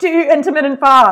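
high, loud mock scream. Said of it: "screaming at everyone".

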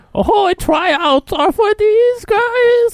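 put-on very high, very slow, drawn-out baby voice. Imitating a preview where a talent agent talks: Adam Sandler baby voice. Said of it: "like, baby voice".

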